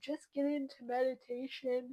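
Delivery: spoken through a yawn. Advising listeners to start meditating, late in the day: yawning while talking. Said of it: "I'm sorry, I'm yawning".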